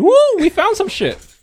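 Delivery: mock, shrill, very high, loud whooping scream. Telling someone about people going through their car, imitating their scream. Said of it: "They screamed".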